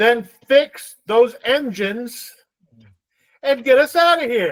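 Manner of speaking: commanding voice like a captain. Voicing a captain ordering the crew to flee: yelling in character. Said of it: "I yell".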